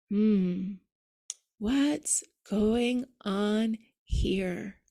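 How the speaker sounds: very slow, halting, broken up into pieces. Showing how to ask oneself a curious question: slow, broken-up delivery. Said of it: "say it slowly and broken up that way".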